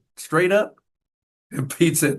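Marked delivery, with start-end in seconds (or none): 0.1-0.7 acted, sort of dry, sarcastic tone. Retelling asking who was traded for him: retelling a sarcastic question. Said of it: "I sort of sarcastically said".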